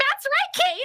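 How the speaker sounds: very high, loud yelling character voice. The voice actor of Bubble gives a sample on request, yelling Bubble voice. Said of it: "I have to yell because he's always like".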